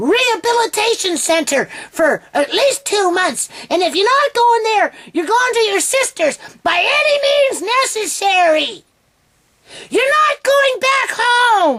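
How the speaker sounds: put-on shrill, screechy British accent. Imitating a social worker telling John where he must go, screechy British accent. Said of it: "screechy freaking social worker with the British accent".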